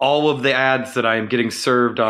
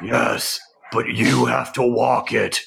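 slow, drawn-out, rough and creaky voice. Imagining Shredder answering his daughter about a puppy: imitating Shredder. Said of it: "Shredder's just like".

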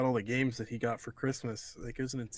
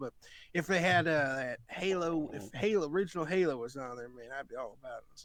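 slow put-on southern voice; 3 semitones higher than usual. Quoting someone's dad in a put-on southern voice. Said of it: "I don't know why I'm giving a southern voice".

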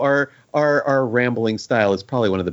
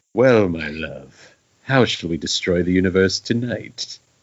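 low, husky, seductive voice; 4 semitones lower than usual. In the Thanos After Dark bit, Thanos speaks to Death, husky sexy Thanos voice. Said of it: "This is Thanos in his lair with death".

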